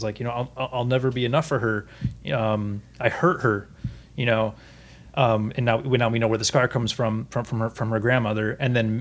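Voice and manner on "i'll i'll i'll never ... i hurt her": usual speaking voice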